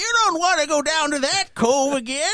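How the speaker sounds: put-on very high, loud, old-timey prospector voice. Retelling voicing a prospector the group ran into, old-timey prospector voice. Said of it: "I did like an old timey prospector".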